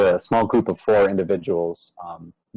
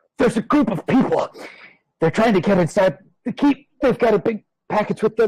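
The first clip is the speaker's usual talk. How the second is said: put-on very high, winded, wheezing, breathless huffing; 13 semitones higher than usual. Having run down the aisle to reach the group, out-of-breath Richard. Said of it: "kind of just leans over and says, / and he's huffing and he's wheezing".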